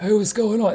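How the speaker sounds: high-pitched, spaced-out, stoned-sounding voice. Retelling a raid where someone else on headset speaks: imitating someone sounding high. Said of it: "he sounds high as a kite".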